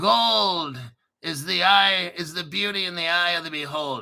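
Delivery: light put-on Irish accent, "gold" stretched out. Reading out the day's fortune from Zoltar in a vaguely Irish Zoltar voice. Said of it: "am I sounding kind of Irish?".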